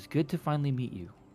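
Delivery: muted, held-back, hushed, very quiet voice. A dinosaur-race woman leans in at the listener's character before leaving, speaking as quietly as possible. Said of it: "she says as quietly as she can".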